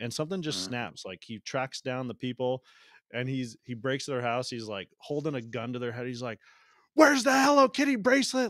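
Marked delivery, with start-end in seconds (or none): 6.9-8.5 very high-pitched, very loud, shrill screaming. Retelling a movie, the speaker acts out a man screaming at robbers: imitating someone screaming. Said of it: "screaming at them".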